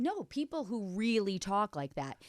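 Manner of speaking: ordinary delivery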